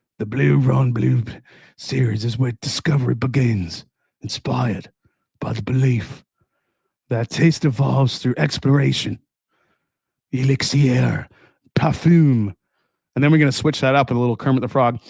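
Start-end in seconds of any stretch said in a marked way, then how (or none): 0.2-12.5 slow, perfume-advertisement style voice with French accent. Read the product text like the back of a perfume, in a French Johnny Depp voice. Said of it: "your Johnny Depp voice? The French Johnny Depp voice?".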